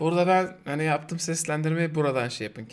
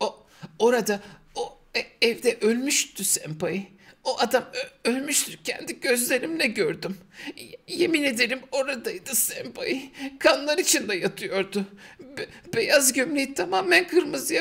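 very slow, high, stammering put-on child's voice; 9 semitones higher than usual. Reading a story passage aloud in character, child character voice. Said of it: "konuk aldığı çocuğu taklit etmeye çalışıyorum. Ben şöyle okuyabiliyorum bunu".

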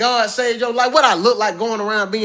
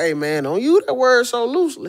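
coach-style, cautioning tone; 2 semitones higher than usual. Imitating the Houston coach telling players not to use a word loosely. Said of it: "He didn't say it like that".

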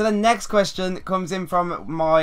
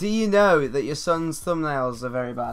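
usual speaking voice

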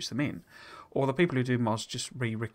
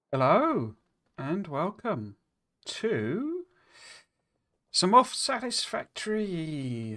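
sounds like speaking with swollen tongue; 6 semitones higher than usual. Host opening the show after biting their tongue that morning, swollen-tongue speech. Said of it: "sounds like I've got a swollen tongue".

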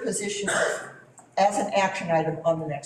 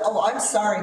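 plain

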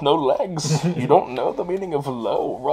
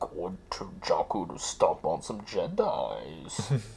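very deep, hushed voice, dropped way down, slow; 9 semitones lower, 11 dB quieter than usual. Riffing on a Star Wars movie's opening crawl, in a Bane voice. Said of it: "Why do you sound like Bane?".

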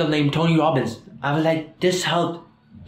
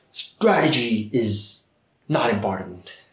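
deep, slow, weighty motivational-speaker style declaration; 6 semitones lower than usual. Retelling what Tony Robbins said while teaching: imitating Tony Robbins. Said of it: "why am I mimicking him".

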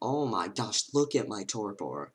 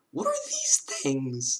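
voice breaking and cracking; 6 semitones higher, 5 dB louder than usual. Attacked by creatures in a dark game, the speaker's voice cracks. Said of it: "That was a spicy voice crack".

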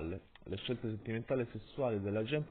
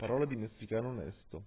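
ordinary delivery, nothing marked

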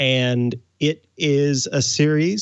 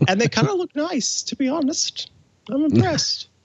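very high, squeaky little cartoon mouse voice; 14 semitones higher than usual. Commenting on a company's tweets about its product, talking in Mickey Mouse voice. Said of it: "talking in Mickey Mouse's voice".

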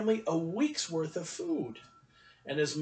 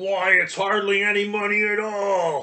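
slow, loud, drawn-out growled grumble; 7 dB louder than usual. An old man at a store counter answers a boy about his money: growled.

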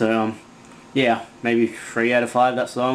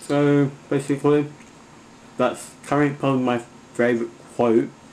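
speaking through a mouthful; 3 semitones higher than usual. Speaker wraps up sharing a favorite quote, talking with mouth full. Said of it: "sorry that I'm talking with a mouthful".

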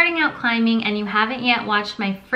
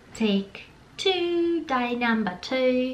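slipping into a soft Australian accent; 2 semitones higher, 5 dB quieter than usual. Vlogger starting a second take of a channel intro, in an Australian accent. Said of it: "I don't know why I'm speaking in an Australian accent".

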